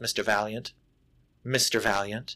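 put-on breathy sultry voice. Speaker describing a film scene acts out a woman waiting in an office, imitating a breathy, sultry voice. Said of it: "it sounds breathy and sultry".

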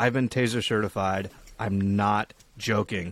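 put-on ordinary American accent, nothing added. Quoting a woman with a london accent, in a normal american accent. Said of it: "I'll do it just in a normal American accent".

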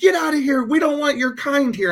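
high-pitched, angry yelling. Retelling how a couple at the next table yelled at them: imitating someone yelling. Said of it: "they're just yelling".

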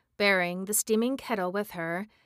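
ordinary delivery

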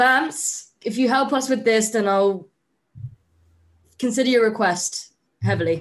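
loud yelling, shouting out. Playing a character calling out to vampire allies: yelling to the vampires. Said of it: "I yell out".

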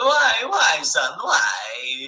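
comically fake Italian accent, loud, very slow, swooping. Quoting an actor's line from a movie clip: imitating an actor's funny fake Italian accent.

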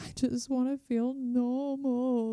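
mock high, slow, drawn-out sobbing cry. Retelling a past moment of sobbing to a partner: retelling a sob. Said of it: "sobbing to, to my partner".

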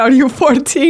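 shrieked, screaming delivery. Retelling how a woman screamed at her over a period accident: imitating someone screaming. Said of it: "She's screaming at me".

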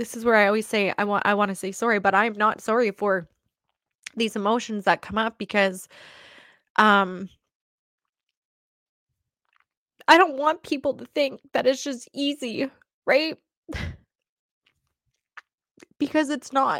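speaking through tears. Asking for a minute to collect herself, crying while talking. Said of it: "Give me a minute here".

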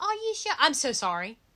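fake British accent slipped in. Joking about slipping into an accent while someone talks: put-on British accent. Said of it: "Did I just slip in my British accent?".

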